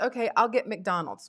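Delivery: ordinary talk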